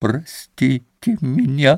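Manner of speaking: hushed moan. Narrating fiction, Katya stops beside Grushenka and moans to her almost in a half-whisper. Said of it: "почти шепотом, простонала ей".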